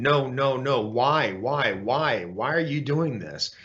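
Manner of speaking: acted-out yelling. Describing how the speaker wakes from these memories, retelling a sleep scream. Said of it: "I'm screaming in my sleep and I'm yelling".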